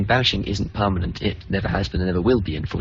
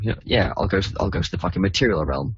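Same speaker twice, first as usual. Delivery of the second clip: usual speaking voice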